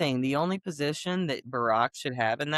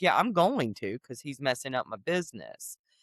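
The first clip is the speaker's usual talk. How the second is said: acted casual, unbothered, offhand, nonchalant tone; 3 semitones lower than usual. Retelling a character's reply about a brother, imitating a nonchalant tone. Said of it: "he's over there nonchalant".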